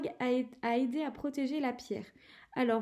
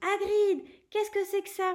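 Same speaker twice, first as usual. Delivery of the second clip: exclaiming with pitch raised; 7 semitones higher, 3 dB louder than usual. Harry, following Hagrid's glance toward the fire, exclaiming to Hagrid.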